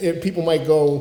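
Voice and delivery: ordinary talk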